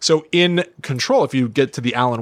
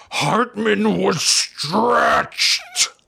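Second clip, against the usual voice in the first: high, rough, creaky, growling monster screech; 8 semitones higher than usual. Retelling a video game monster's line: imitating a growling, screeching voice. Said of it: "growling voice screeching".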